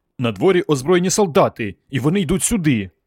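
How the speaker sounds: words bursting out, blurted. Reading the story, the boy answers his father Tim: bursting out. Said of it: "Хлопця прорвало".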